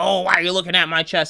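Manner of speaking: put-on rude voice. Acting out her comment to him: imitating a rude tone. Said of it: "in a rude way".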